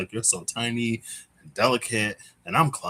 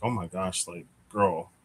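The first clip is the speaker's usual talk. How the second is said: put-on panicked freaking out; 3 semitones lower than usual. Retelling her own reaction in a dream: imitating her own panicked self. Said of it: "I was already freaking out".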